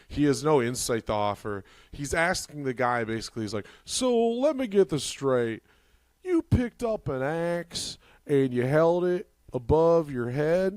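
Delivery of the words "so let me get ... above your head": put-on evil-sounding interviewer voice, higher pitch. Retelling an interviewer questioning an axe killer: imitating Doctor Phil sounding evil. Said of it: "he's talking like the most evil guy ever".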